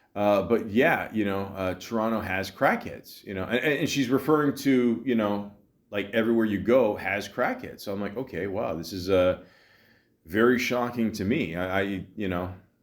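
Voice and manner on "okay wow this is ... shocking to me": ordinary delivery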